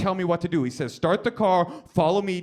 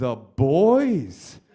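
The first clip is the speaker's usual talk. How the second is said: usual speaking voice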